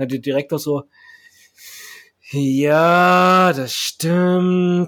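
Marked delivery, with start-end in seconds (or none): 2.3-4.9 through gritted teeth, first word drawn out. Acting out a prison director answering a press question, mock gritted-teeth reply. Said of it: "So mit zusammengebissenen Zähnen".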